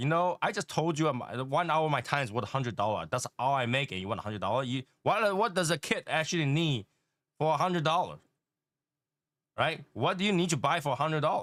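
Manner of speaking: put-on pissed-off, angry father voice ranting. Retelling a dad's reply to his son asking for money, imitating an angry dad. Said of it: "And Dad got really pissed off".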